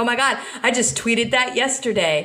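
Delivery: plain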